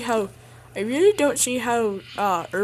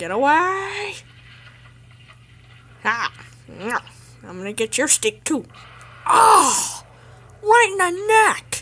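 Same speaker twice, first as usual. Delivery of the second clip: higher-pitched dinosaur character voice; 5 semitones higher, 4 dB louder than usual. Performing the dinosaur's lines, in a dinosaur voice. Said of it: "I'm going to be doing the voice of the dinosaur".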